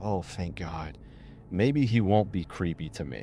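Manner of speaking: ordinary talk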